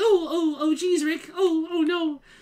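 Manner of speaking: very high, slow, stammering cartoon voice. Mocking own stammer by talking like a Rick and Morty character. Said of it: "I feel like I'm talking like a Rick and Morty character".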